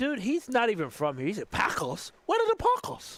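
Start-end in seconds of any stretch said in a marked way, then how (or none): 1.3-3.2 clumsy, bad Swedish accent, pitched up. Mocking the bride's father, who is swedish, in a bad swedish accent. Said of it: "brutalized the Swedish accent twice".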